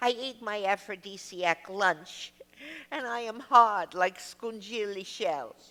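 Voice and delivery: heavy, thick, put-on Italian accent. Retelling a producer's phone call: imitating thick Italian accent. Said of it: "A man with a thick Italian accent".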